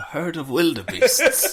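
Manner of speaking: slow documentary narrator voice. Joking that a child Simba is voiced like David Attenborough: David Attenborough voice. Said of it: "David Attenborough plays Simba".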